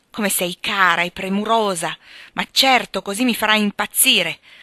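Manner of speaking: impatient, fed-up outburst. He answers her offer to stay or send the nurse, exclaimed impatiently. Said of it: "esclamò scrollando la testa impaziente".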